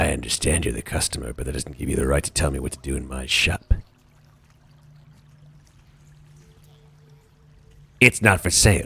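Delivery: very deep, low-pitched hobgoblin voice. Voicing a hobgoblin shopkeeper refusing a customer: hobgoblin shopkeeper voice. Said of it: "the hobgoblin ... raises himself and says".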